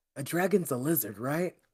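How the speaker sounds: hushed, quiet half-whisper. Voicing a character who leans toward the group: half-whispering in character. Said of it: "leans over and whispers to".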